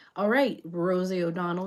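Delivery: ordinary talk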